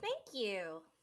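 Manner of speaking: sugary, sweet delivery. Voicing Octavia thanking a helper who offers an escort: said sweetly. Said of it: "Octavia says sweetly".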